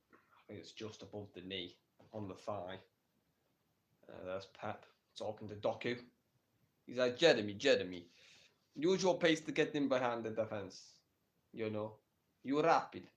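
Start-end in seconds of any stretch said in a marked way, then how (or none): 7.1-12.9 put-on Italian accent. Narrating Pep talking to Doku, voicing Pep in an Italian accent. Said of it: "I don't know why I'm doing an Italian accent".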